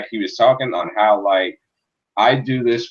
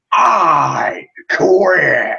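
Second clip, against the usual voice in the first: the word "I" drawn out, rough and pitched up; 7 semitones higher, 4 dB louder than usual. Imitating John Cena's recorded line from a match: John Cena impression. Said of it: "I can even tell you the voice".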